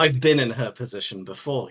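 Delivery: ordinary delivery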